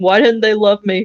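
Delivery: mock, put-on crying. Imagining what a man says while crying alone, mock crying.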